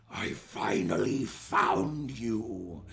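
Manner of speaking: deep, low growled voice, very slow. Narrating a story, voicing the character's spoken line: low growl. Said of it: "he growls lowly, and he says".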